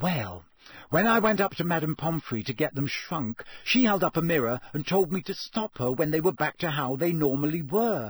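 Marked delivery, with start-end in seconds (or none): none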